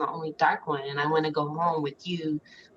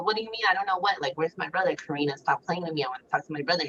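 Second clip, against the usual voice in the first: plain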